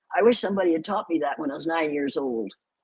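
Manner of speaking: ordinary talk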